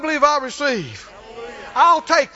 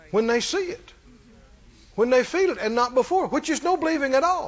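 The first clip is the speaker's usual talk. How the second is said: ordinary talk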